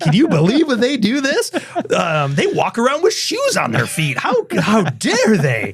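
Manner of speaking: mock outraged, gossipy alien voice.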